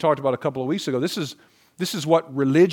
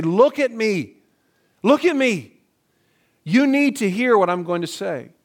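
raised, pitched-up, loud voice; 6 semitones higher, 3 dB louder than usual. Explaining how to get someone's attention, demonstrating with a raised voice. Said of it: "you might sort of raise your voice and say".

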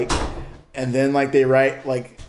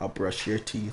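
shady, sketchy, low, very hushed tone; 4 semitones lower, 11 dB quieter than usual. Showing how anything said in that tone comes out sketchy: sketchy tone. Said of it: "it just comes out sketchy".

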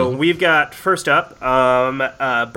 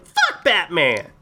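squeaky little put-on voice, high; 4 semitones higher than usual. Imitating how a guy sounds saying a line, high squeaky voice. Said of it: "Like he gets all squeaky".

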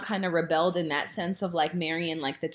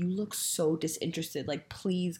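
imitated whisper, much quieter; 6 dB quieter than usual. Retelling what a girl whispered at the table, retelling a whisper.

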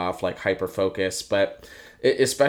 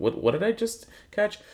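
very high, baffled, lost tone. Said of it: "I wanted to ask someone, like".

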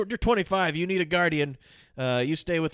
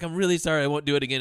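put-on begging tone. Retelling how Rose McGowan tries an apologetic tack with the grandma, mock apology. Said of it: "she tries that tack where she's like".

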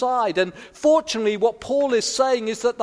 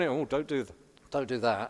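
low, hushed, fussing half-whisper under the breath; 12 semitones lower, 10 dB quieter than usual. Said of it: "our voice just whispering".

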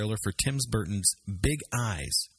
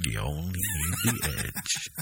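big, lower monster truck announcer voice; 3 semitones lower than usual. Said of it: "Mister Announcer guy with the big voice".

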